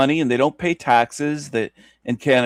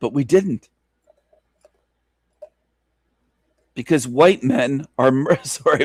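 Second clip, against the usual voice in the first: voice breaking. Speaker making a point, voice cracking mid-sentence. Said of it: "my voice cracked there".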